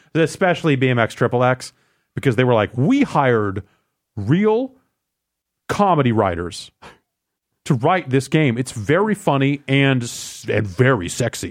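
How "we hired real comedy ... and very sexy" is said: plain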